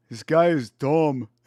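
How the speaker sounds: put-on oafy guy voice. Demonstrating how to do a Walter Walker impression, Walter Walker oafy deep voice. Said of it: "like kind of oafy sounding voice".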